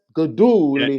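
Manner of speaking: Gaduli stressed with emphatic extra punch. Asking whether the word needs oomph, the speaker tries it: Gaduli with oomph. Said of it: "we have to put some oomph on that".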